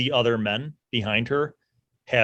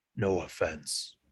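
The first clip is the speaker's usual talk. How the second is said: barely audible whisper, close to the ear; 7 semitones lower, 11 dB quieter than usual. Voicing a burly dwarf who whispers to a captive: whispering. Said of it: "he whispers to Angler and he says".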